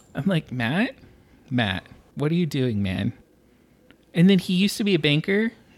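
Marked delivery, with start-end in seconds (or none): none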